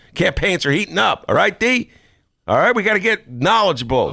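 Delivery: loud, fired-up, rousing yell. Show host telling D to study the issues as campaigns heat up; yelling. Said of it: "Quit yelling".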